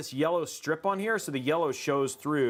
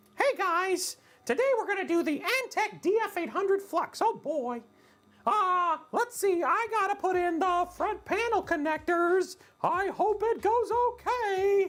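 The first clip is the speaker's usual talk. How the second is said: tiny, very high cartoon mouse voice. Narrating a PC build video as a joke, in a Mickey Mouse voice. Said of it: "What if I did the whole thing as Mickey Mouse?".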